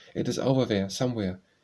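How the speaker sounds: plain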